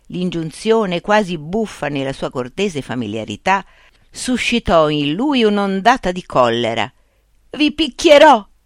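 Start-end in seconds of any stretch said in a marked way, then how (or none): 7.5-8.4 very high shout broken by sobs. A man ordered to put down his spades answers them, shouted while sobbing. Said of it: "gridò singhiozzando per l'emozione".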